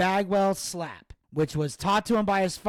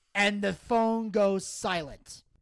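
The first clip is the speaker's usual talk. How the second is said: ordinary talk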